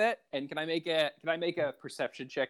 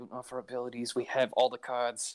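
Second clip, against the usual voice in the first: grumbling aside; 3 semitones lower than usual. During bartering in a role-play game, a character speaks to a companion under his breath. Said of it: "like under his breath".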